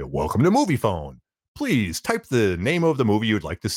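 recorded announcer voice, movie-style. Recalling a Seinfeld episode, the speaker does the Moviefone guy voice. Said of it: "I'm trying to do the movie phone guy".

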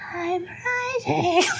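put-on ghostly, creepy, very high childlike voice. Describing a character's ghostly child voice, doing the creepy child voice. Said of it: "if you thought the child voice is bad".

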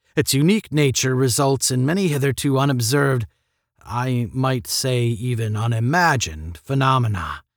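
ordinary delivery

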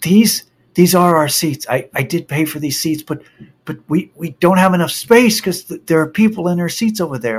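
put-on panicky, panicked pleading voice. Retelling what a college kid said about the seats, imitating a panicky plea. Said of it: "in a very panicky voice".

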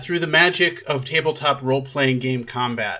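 ordinary delivery

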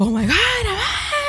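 mock panicking voice. Retelling a first period in the restroom: imitating own panic. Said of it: "start panicking".

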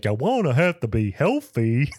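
goofy, dopey, doofy cartoon voice. Describing a scene where a can of food starts talking: doofy talking-can voice. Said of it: "has this like doofy voice".

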